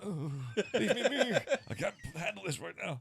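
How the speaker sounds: very high, shrill, loud pleading tone. Retelling own reaction to critics while hungover: imitating hungover self. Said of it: "I'm having a hangover".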